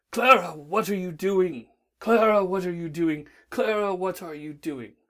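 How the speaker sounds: growly voice, calling out. Reading a Doctor Who story, a voice calls through the TARDIS halls, growly voice. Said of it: "a growly voice echoed around its halls".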